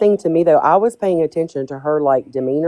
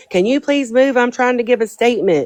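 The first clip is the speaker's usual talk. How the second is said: play-acted, high, self-important yell; 7 semitones higher than usual. Retelling how a woman at the end of the driveway addressed a truck, imitate her yelling. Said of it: "and she yells to the truck".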